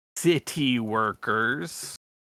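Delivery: heavy, dripping sarcastic stress on "city workers". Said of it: "just as much sarcasm and air quotes".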